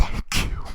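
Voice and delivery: put-on teary voice, about to cry. Retelling a woman thanking a drag queen, imitating someone about to cry. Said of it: "about to cry".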